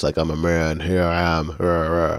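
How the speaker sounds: flat, monotone put-on dubbing voice. Mocking how the characters in the dub all sound the same, in a monotone voice. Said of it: "the same monotone voice".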